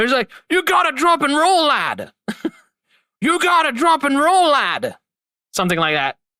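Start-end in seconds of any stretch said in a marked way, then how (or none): 0.5-5.0 put-on higher Irish accent, character voice. Describing a game's voice acting, the speaker quotes a line in Jacksepticeye's Irish accent. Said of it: "that Irish accent".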